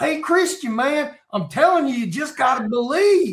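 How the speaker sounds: put-on Tennessee country accent. Imitating a preacher, a little country guy from Tennessee: imitating Dusty Rush. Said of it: "Little country guy from Tennessee".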